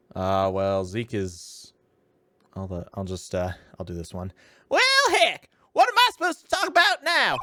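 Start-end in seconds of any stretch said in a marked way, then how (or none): 4.7-7.4 put-on terrible Southern accent. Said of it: "my southern accent is terrible".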